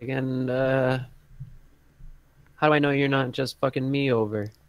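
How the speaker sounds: slightly shaky, unsteady voice. A game master voices a man answering an offer to settle a contract, slightly shaky voice. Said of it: "his voice is a little shaky".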